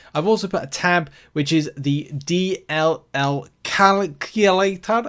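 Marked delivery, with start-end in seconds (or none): 1.8-5.1 very slow, slightly Scottish delivery. Speaker describing a tab in their spreadsheet, in a slightly Scottish accent. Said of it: "kind of turned it a bit Scottish".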